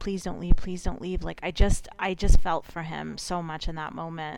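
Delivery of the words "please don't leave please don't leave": mock imploring plea, said twice over. Retelling a boyfriend begging his partner not to leave: imitating someone begging. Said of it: "and then begging her".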